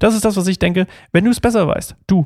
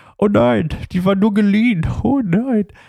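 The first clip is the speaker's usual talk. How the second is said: higher-pitched, exaggerated, comedic mock wailing panic. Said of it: "wie eine Komödie".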